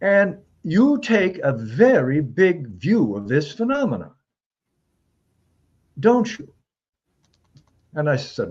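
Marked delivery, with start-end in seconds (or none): 0.0-6.5 put-on patrician Northeast accent, higher pitched. Retelling a phone call, imitating Lawrence Rockefeller's patrician accent. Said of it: "I'll try just a little bit to give you a sense".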